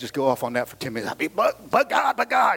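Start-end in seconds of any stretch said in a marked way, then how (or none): 1.3-2.6 high, fired-up, hollering preacher voice. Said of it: "if we were Pentecostal".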